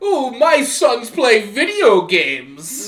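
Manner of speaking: put-on posh drawl, high, very loud, swooping. Mimicking the listener's dad as heard on the podcast, imitating a posh voice. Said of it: "He's very posh".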